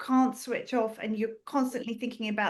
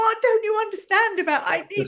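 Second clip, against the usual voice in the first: put-on scream, higher and louder; 10 semitones higher, 7 dB louder than usual. Retelling a call with a phone bot: imitating own screaming. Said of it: "I've ended up screaming at the phone".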